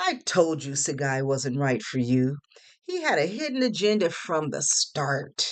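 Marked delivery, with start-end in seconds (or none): none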